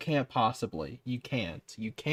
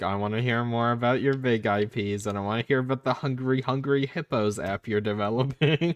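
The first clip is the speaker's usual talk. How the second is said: plain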